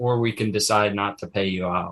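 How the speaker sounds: normal talking voice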